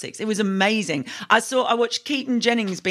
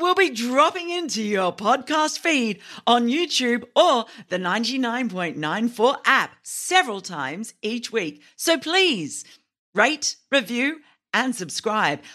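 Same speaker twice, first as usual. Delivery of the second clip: on-air radio DJ announcer delivery; 4 semitones higher than usual. Reading a podcast network promo aloud, in radio DJ style. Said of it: "Maybe my best radio DJ style".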